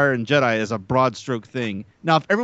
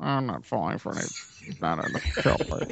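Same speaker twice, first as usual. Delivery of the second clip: unemotional impression, much lower and quieter; 5 semitones lower, 8 dB quieter than usual. Friends try readings of a joke line; one suggests a George Lucas impression. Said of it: "a little less emotional".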